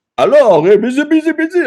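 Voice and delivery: full-on, very high put-on French accent. Retelling how an actor did a full-on French impression: imitating a put-on French accent. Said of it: "full-on French impression and character".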